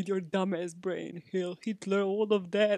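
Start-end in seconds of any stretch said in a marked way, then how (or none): 1.3-2.8 heavy put-on Eastern European accent throughout. Retelling what a woman said, in a completely Eastern European accent. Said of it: "like in a completely Eastern European accent".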